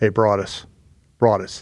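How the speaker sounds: soft, hushed whisper. Retelling a security guy on the sidelines calling out: imitating a whisper. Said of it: "he's kinda, like, whispering to me".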